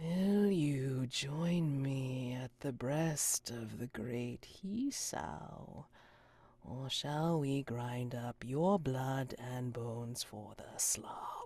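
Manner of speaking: menacing, threatening voice. Voicing an unseen figure in a dark theater threatening a player: menacing voice from the dark. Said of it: "a voice nears you and says".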